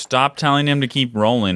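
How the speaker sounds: ordinary talk, nothing marked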